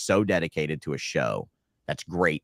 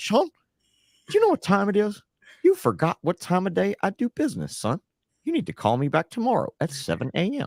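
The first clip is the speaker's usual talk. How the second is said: very high, animated, swooping sing-song. Imitating the show organizer scolding Sean about calling times: Wayne impression. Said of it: "That's exactly how he is".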